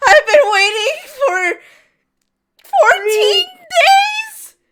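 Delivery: shrill, loud weeping with "days" drawn out. Retelling a man who dropped to his knees over the bag, imitating someone sobbing. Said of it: "he gets on his knees and starts sobbing".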